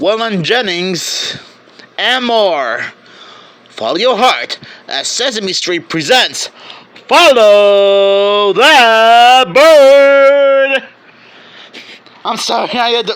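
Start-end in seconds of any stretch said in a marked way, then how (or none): 0.0-10.8 mock dramatic movie-trailer narration voice, louder. Reading a movie's plot blurb aloud like a trailer: put-on dramatic trailer narration. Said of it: "had to make it sound dr-, so dramatic".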